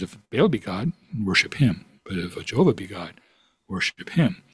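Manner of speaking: ordinary talk, nothing marked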